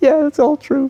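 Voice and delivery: very high, acted, blubbering through tears. Retelling what the other driver said in a road rage story: imitating someone crying. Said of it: "And he starts crying".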